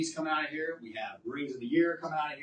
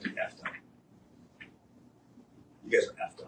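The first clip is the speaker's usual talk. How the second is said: trembling with anger, much quieter. Addressing a whole class section about concerning work, shaking with anger. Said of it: "I'm shaking because I'm freaking pissed off".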